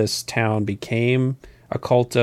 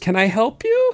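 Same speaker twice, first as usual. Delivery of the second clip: play-acted, very high, meek, whimpering little voice; 12 semitones higher than usual. Recapping a scene where a trapped character answers people beating on the door, imitating a whimper. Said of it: "he kind of whimpers".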